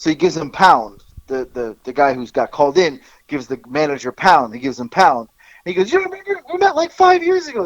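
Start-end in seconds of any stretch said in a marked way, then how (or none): 5.9-7.7 shrill, high, loud, full-throated shout. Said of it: "So he's yelling really loud".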